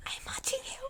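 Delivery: put-on cheerful, happy, very soft small-child whisper. Imagining how someone would whisper it, in a happy little kid's voice. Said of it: "but like in a little kid's voice, like a happy little kid".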